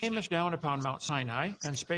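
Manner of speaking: normal talking voice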